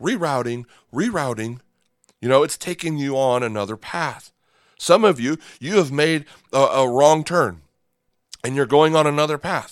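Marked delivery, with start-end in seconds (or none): 0.0-1.6 imitated British sat-nav navigation voice. Speaking to listeners about wrong turns on God's path, imitating a female British GPS voice. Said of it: "that female British voice saying".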